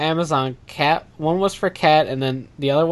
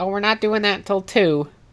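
derisive, mocking, pitched-up voice; 5 semitones higher than usual. Retelling asking the desk for Pokemon cards, mocking the clerk's reply: mocking impression of desk clerk. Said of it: "anyone I hate just automatically gets that voice".

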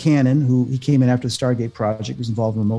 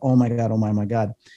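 put-on crying and sobbing; 2 semitones lower than usual. Retelling breaking down while reading a book: retelling own crying. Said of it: "I broke down crying".

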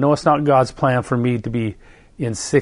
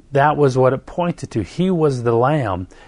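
usual speaking voice

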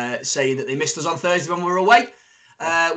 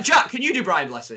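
plain

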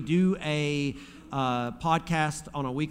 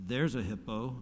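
soft, mock casual, unbothered, nonchalant, offhand delivery; 4 semitones lower, 6 dB quieter than usual. Retelling what the guy with the AK-47 said, pointing to a hippo: retelling a nonchalant remark. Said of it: "just real nonchalant".

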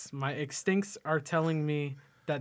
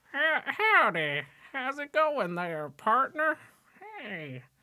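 silly put-on voice, very high, swooping around; 10 semitones higher, 4 dB louder than usual. Redoing a friend's impression of Abraham Lincoln: Sean's Abraham Lincoln impression. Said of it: "I'm going to do the impression of Sean right now. This is him being Abraham Lincoln".

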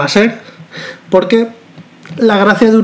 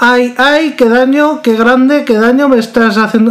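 put-on female pained scream, much higher; 5 semitones higher than usual. Retelling a man's anecdote, acting out a woman screaming in pain. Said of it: "la tía empezó a gritar".

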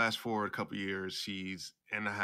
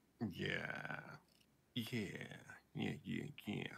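slow, breathy, half-whispered, skeptical doubtful yeahs; 10 dB quieter than usual. Responding to another speaker's stated overall goal: doubtful tone. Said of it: "you sound very doubtful right now".

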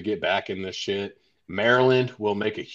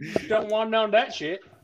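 put-on high, loud Southern accent. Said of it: "has a Southern accent".

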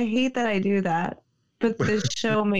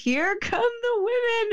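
acted-out, very high, yelled wrestling-style announcer shout; 12 semitones higher than usual. Retelling what she yelled as her girlfriends came in while she got tattooed. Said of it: "I just yelled".

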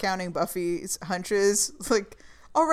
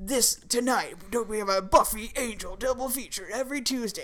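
cheesy TV network promo announcer voice; 2 semitones higher than usual. Recalling old TV crossover episodes, doing the stupid WB voice. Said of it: "this stupid WB voice".

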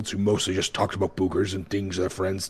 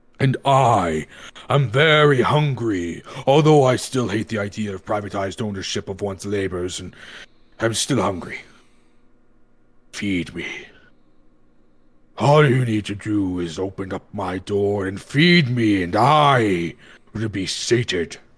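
rumbling, ranting voice. A coal-hungry furnace character demands to be fed, in a ranting, rumbling furnace voice. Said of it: "didn't you hear my ranting and rumbling?".

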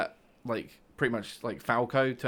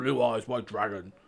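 voice dropped really low, anime style. Imitating Yugi as he plays his cards, deep Yugi voice. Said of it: "when he goes really deep".

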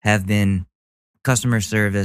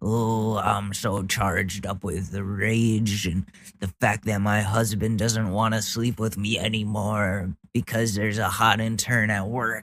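scornful, mocking put-on ranting voice; 6 dB quieter than usual. Reacting to a clip, voicing the maskless woman reading her printout: mocking imitation of the lady. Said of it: "and she brings out the folded up printout".

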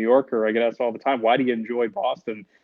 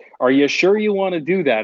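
very stern, doubting, put-on tone, pitched up; 6 semitones higher, 3 dB louder than usual. Retelling a dad's question about studying communications: imitating a stern tone. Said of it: "in a very stern way".

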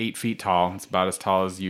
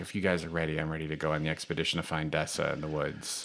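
muted, soft, hushed delivery; 3 semitones lower, 9 dB quieter than usual. Narrating the game, the speaker voices Master Magnus addressing the group, Master Magnus in hushed tones. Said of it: "he says in kind of hushed tones".

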